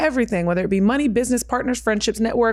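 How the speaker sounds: ordinary talk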